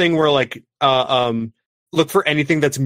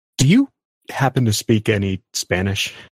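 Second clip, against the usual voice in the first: quiet, lower mutter under the breath; 5 semitones lower than usual. Voicing a character quietly asking Mystic about Spanish: under her breath. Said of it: "kind of under her breath is like".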